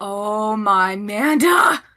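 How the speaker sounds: quietly muttered under the breath. Voicing a character watching a giant serpent emerge: said under her breath. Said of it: "Esme says under her breath".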